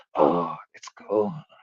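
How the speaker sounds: seductive, very quiet, soft, sultry murmur. Mimicking how another speaker said a name, mocking a sultry delivery. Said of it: "that's not how you said it. You're like".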